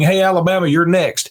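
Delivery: put-on, very effeminate voice. Quoting what a lineman said, imitating a very effeminate voice. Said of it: "with the very effeminate voice saying".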